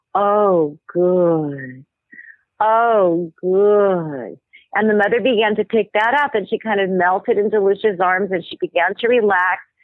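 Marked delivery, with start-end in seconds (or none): 0.1-4.3 put-on low, guttural whisper, slower. Retelling how a woman soothed a screaming mother: Lucia's low guttural whisper. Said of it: "whisper in her ear in a very low, guttural voice".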